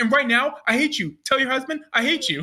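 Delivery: mock furious, fed-up outburst. Retelling what he said to her on the call: retelling an angry rant. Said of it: "He's so mad".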